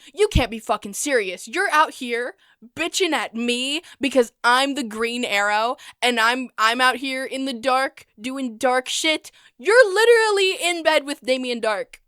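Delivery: mock, loud, dramatic, accusing outburst. Retelling how Oliver confronts Captain Lance: Oliver confronting dramatically. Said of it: "Oliver dramatically confronts Captain Lance".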